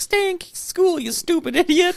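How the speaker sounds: very high-pitched cartoon character voice. Speaker retells an autograph signing for their son, quoting it in Bender voice. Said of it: "he did the Bender voice".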